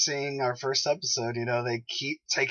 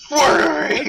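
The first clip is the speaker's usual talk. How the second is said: put-on gravelly vigilante yell, louder; 12 dB louder than usual. Imitating Ollie demanding answers: gravelly yelling Ollie voice. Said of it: "Ollie just going".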